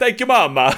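very high, loud, squealing delivery in bad fake Italian accent. Mocking how Mario talks in the games, in a terrible Italian-accent Mario voice. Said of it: "terrible Italian accent voice".

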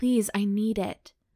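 desperate, urgent, begging tone. Narrator reads her own first-person line to him, pleading. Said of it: "I plead".

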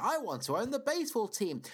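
mock booming loud voice. Speaking as George, telling everyone what he wants, in a really loud voice. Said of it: "I say in a really loud voice".

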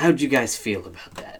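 soft, ominous, loaded disapproving tone. Telling Sifu how he asks the class things: imitating Sifu's disapproving tone. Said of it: "the way you projected it".

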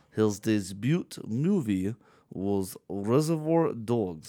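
faint Russian accent, spoken very slowly. Retelling an answer to a trivia question: slight Russian accent. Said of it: "I could do a slightly Russian accent".

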